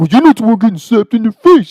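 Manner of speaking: very high, shrill, loud, indignant irate yell. Retelling a friend's reply to another friend: imitating an irate friend. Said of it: "he's just irate".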